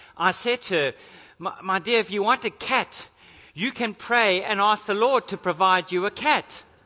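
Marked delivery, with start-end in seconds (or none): none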